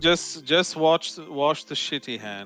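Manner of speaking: fake aristocratic British drawl, very slow. Joking among friends while playing a rich person, put-on posh British accent. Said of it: "British, you know, British accents".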